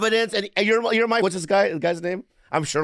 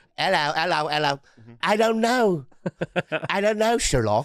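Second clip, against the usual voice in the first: put-on British accent. Asked what he thinks, Watson, replying in character: Watson in a British accent. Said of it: "your even your British is".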